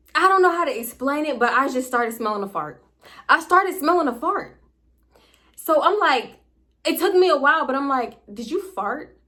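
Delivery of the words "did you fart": giggly, laughing, half-joking, not serious. Retelling a question once asked of a partner: imitating asking while laughing. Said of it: "kinda in a laughing way".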